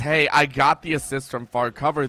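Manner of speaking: plain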